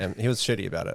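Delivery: ordinary delivery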